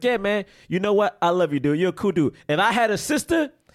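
laid-back, casual, brushing-off dude talk. Retelling a movie scene where he brushes it off: imitating The Rock. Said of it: "He's like".

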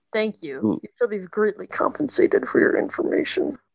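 low, deep orc monster voice. Game master voices a figure the players overhear, in a deep orcish voice. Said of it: "deep orcish voice".

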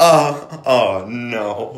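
mock shaky, trembling, quavering voice full of dread. Repeating back how the other person just said it, imitating a shaky 'oh, no'. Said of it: "the way your voice shakes".

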